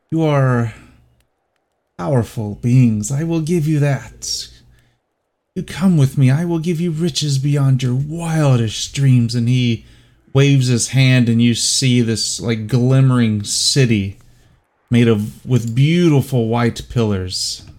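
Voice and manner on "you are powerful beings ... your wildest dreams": hushed, soft whispering voice. Game master voicing a whisper the players hear in their souls: whispering voice in the soul. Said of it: "you begin to hear a whispering in your soul".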